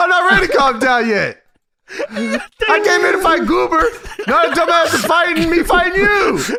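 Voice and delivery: very high, all-out yell at top of lungs. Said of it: "yelling at the top of his fucking lungs".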